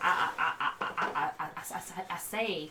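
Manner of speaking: loud, crowing, cartoon-style Southern rooster voice. Explaining his accent to the others, slipping back into Foghorn Leghorn voice. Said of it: "I was just doing Foghorn Leghorn".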